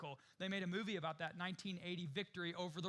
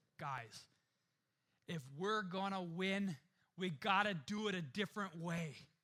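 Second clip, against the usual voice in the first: put-on very strong, laid-on-thick Minnesota accent. Retelling a movie scene, the speaker quotes the coach addressing the men in a strong Minnesota accent. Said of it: "in this very strong Minnesota accent".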